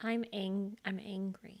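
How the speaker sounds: quiet voice. Giving a last statement about being angry: soft-spoken. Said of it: "you are very soft-spoken right now".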